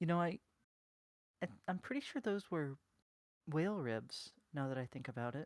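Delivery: character whisper. Voicing the character Tia as she leans in, whispering to the group. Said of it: "leans in and whispers to the group".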